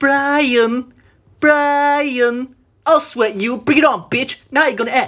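high-pitched cartoon voice with words stretched out. Asked by another speaker to do Stewie, performing a Stewie impression. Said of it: "Can you do Stewie?".

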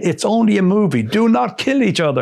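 very high, shouted put-on French accent. Retelling what the producer told everyone during the movie, in a french accent. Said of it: "in this French accent".

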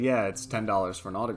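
normal talking voice

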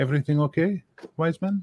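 put-on sweet, high, childlike manner. She turns to the wise man and smiles: childlike. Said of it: "smiles in that sort of childlike way".

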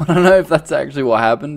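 speech bubbling with laughter throughout. Wondering aloud what happened to a character, laughing while talking. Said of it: "Sorry if I'm laughing".

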